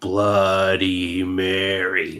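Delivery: low, very slow, ominous intoning.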